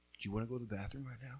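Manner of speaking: quiet, low, stern voice, quick pace. Recalling how their dad would come up to them, imitating dad's quiet, low voice. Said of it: "the quiet, low voice that he would come up to you".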